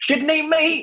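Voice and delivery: very high caricature voice. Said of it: "let's make another stereotype then".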